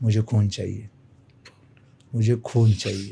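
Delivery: eerie, creepy, unsettling voice. Retelling how a man at a shrine said this: imitating a creepy man. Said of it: "creepy smile देऊन बोलतो".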